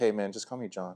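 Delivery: soft, calm, easygoing, totally unbothered tone. Retelling how a calm seal named John introduced himself: imitating John's calm nonchalant tone. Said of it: "The most calmest, nonchalant dude".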